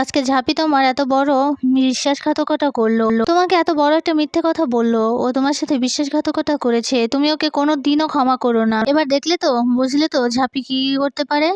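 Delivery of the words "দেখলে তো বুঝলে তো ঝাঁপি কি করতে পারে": ordinary delivery, nothing marked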